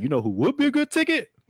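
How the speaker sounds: put-on old-time radio announcer voice, high and wide.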